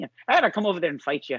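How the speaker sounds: put-on angry, high Irish accent. Talking about Fury beating Klitschko, doing Fury as an angry Irishman. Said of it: "sound like a like an angry Irishman".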